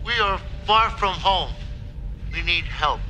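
high, choppy, simple one-syllable speech. Describing how these characters speak, imitating their monosyllabic speech patterns. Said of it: "They speak in very, like, kind of monosyllabic speech patterns".

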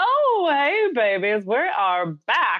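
high, swooping, groovy seventies-style voice. Back from an ad break, greeting the listeners: 1970s voice. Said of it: "That's my 1970s voice".

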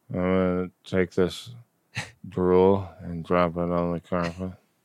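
soft, sleepy, half-asleep mumbling. Acting out Janeway while she sleeps: Janeway mumbling in her sleep. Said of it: "mumbling in her sleep".

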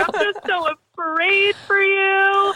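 drawn-out, very high, slow sobbing voice. Retelling how your mom caught you smoking on the back deck, imitating mom crying. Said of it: "she just started crying".

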